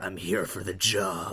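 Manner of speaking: hushed whisper, close and quiet. Creeping up behind a man to speak into his ear, whispering in his ear. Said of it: "so I just like whisper in his ear".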